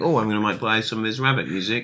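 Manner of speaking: normal talking voice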